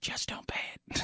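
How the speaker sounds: very quiet, secretive whisper. Acting out what a man says after talking about student loan debt, in a whisper. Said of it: "And then he whispers".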